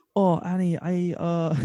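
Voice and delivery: very slow, drawn-out, high put-on Scottish accent. Asked to do an irish accent, the speaker slips into a scottish accent. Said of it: "It's good Scottish though".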